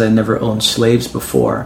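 usual speaking voice

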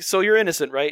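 ordinary delivery

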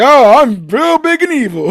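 squeaky, very high, stretched-out, slow put-on voice. Tell how you liked a pink-streaked girl's bit about someone, retelling her impression of Ball. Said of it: "I liked her impression of Ball".

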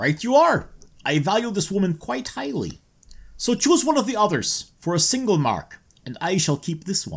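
put-on vague, inconsistent Eastern European accent. A character in a scene bargaining over a price, in a vague Eastern European accent. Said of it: "This accent is—it's all over the place. vaguely Eastern European".

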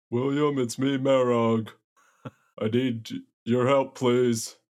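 giant's bellowing voice. A giant calling out to someone in a basement for help, bellowing. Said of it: "I'm a giant and I'm bellowing".

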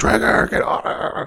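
scream-like voice. Retelling a game scene where a strapped-down prisoner screams: imitating someone screaming. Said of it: "he starts screaming for Traeger".

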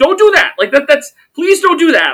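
very high, loud shrieking scream. Streamer retells reacting to a match while on commentary: retelling screaming at the screen. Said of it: "I'm screaming at him over the screen".

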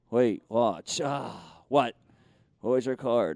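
low, showy street-magician voice, pitched way down. Voicing a puppet named Ollie offering magic: David Blaine voice. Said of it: "the voice of, uh, the always charismatic street magician, David Blaine".

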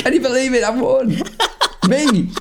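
very high-pitched, stunned, amazed disbelief. Retelling the kid's win at the Survivor Series, imitating someone really surprised. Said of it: "he sounds really surprised about it".

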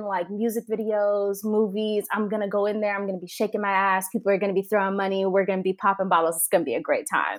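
plain

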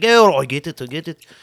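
put-on slow, drawn-out Scottish accent. Imitating a sacked manager accepting the news: Scottish accent as David Moyes.

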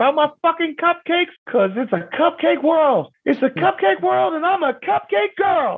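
very high, shrieking, screaming put-on voice. Retelling what Jamar said in the cupcake class; imitating Jamar's high voice. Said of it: "he's doing this high voice thing".

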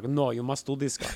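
fair put-on attempt at a Russian accent. Quoting the Russian Orthodox people pushing the filmmakers: put-on Russian accent. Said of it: "Is that a Russian accent?".

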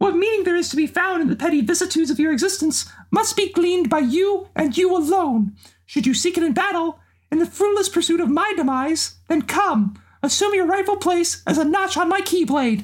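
cartoon mouse character voice. Performing a few Xeno speeches in Mickey Mouse voice. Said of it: "here's a few Xeno speeches with Mickey Mouse".

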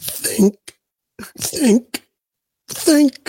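scratchy, raspy bear voice, pitched way up. Quoting Pooh's line about thinking: scratchy Winnie the Pooh voice. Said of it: "As Pooh says".

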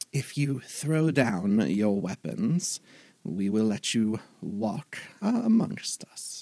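swooping, creature-like owl voice. Game narrator voicing an owling speaking to the crew, in owling creature voice. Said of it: "Now I'm going into the other owling voice".

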